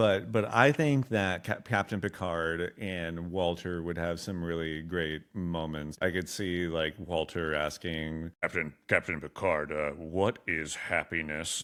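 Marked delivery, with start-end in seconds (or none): 8.4-11.6 stilted, condescending robot voice. Imagining the robot Walter asking Captain Picard a question: Walter voice, Sling Blade-like. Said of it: "he kinda talks like this".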